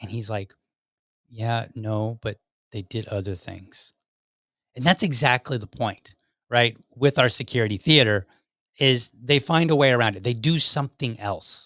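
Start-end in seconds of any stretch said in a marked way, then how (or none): 1.3-3.9 low, soft, near-whimper, voice sinking away. Retelling someone's reply when he was challenged, retelling a low whimper. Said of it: "his voice lowers, it kind of almost whimpers".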